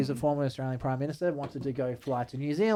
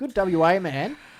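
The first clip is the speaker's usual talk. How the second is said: very slow, dry, drawn-out, dripping sarcasm; 4 semitones higher, 4 dB louder than usual. Naming the attorney general and praising him: sarcastic. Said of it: "Note the sarcasm again".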